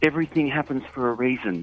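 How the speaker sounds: plain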